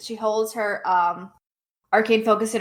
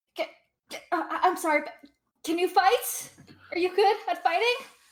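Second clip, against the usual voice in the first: very high, stammering shout in a character voice; 10 semitones higher than usual. Playing a character who shouts to another character during a fight: in-character shout. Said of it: "and shouts".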